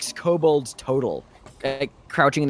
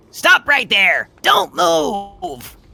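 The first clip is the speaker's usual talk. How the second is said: very high, loud, deliberate, commanding tone; 11 semitones higher, 5 dB louder than usual. Voicing kobold guards who stop the party: kobold guards ordering. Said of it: "they're kind of standing at the ready and they say".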